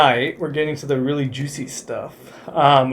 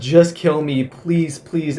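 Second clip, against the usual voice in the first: put-on begging, pleading voice. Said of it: "as she keeps begging".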